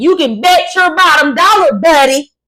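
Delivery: loud, high, on-air style shout. Retelling how Nancy Grace talks on Fox News: imitating Nancy Grace screaming. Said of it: "on Fox News screaming, saying".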